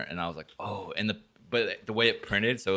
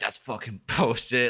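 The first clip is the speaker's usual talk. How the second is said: mock furious, raging, swearing rant; 3 semitones higher than usual. Recalling showing their dad something that made him furious: imitating dad's angry rant. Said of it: "my dad just went off on a fucking tangent".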